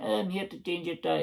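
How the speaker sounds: put-on northeast Scottish Buckie accent. Acting out the AA guy who comes to change a flat tire: Buckie accent. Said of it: "I'm just giving him that accent".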